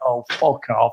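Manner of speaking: put-on sour, sulky grumble. Retelling how you react after your team gets beaten: imitating own sulking. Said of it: "I do sulk and sit there like".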